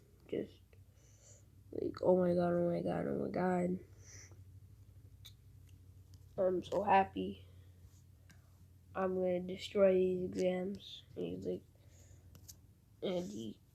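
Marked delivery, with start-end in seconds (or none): none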